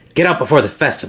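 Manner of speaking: hissed, hissing. A narrator reads a daughter suddenly warning the listener: hissing. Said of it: "she hisses".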